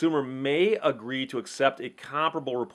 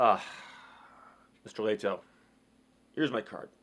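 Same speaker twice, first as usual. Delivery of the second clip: put-on condescending, breathy half-whisper; 4 semitones lower, 4 dB quieter than usual. Speaker retelling a man from General Motors handing over his card, imitating condescending tone. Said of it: "really condescending look and tone to his voice".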